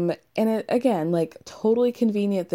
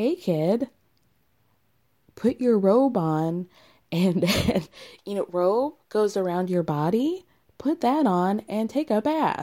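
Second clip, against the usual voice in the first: put-on condescending kindergarten-teacher tone, as to a small child. Retelling how a fiance speaks to his partner: imitating him talking down like a kindergarten teacher. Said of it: "a kindergarten teacher talks to one of her students".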